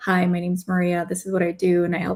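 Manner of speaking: level, flat, droning monotone. Explaining executive tone by demonstrating a self-introduction in flat monotone. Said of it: "So we all know what monotone sounds like. It's like".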